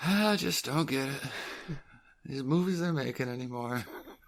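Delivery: wistful musing, pitched a touch high. Imagining the actor Tommy Lee Jones reading the script: wistful Tommy Lee Jones voice. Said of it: "I just picture him all wistful".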